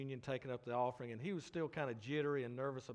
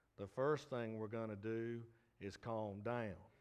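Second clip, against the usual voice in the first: unhurried, slow and easy drawl; 3 semitones lower than usual. Retelling how Joel answered everyone's questions, in Joel's drawl. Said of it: "in that drawl that he has".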